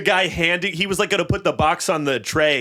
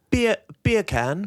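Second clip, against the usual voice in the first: put-on British accent. Retelling a childhood joke, saying a phrase in a british accent. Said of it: "can you say um, beer can with a British accent?".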